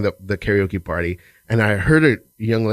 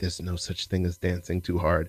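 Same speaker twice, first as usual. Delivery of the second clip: very soft, hushed whisper close to the ear; 3 semitones lower, 10 dB quieter than usual. Retelling a line whispered into a dancer's ear at a party: retelling own whisper. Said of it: "and I whispered in her ear".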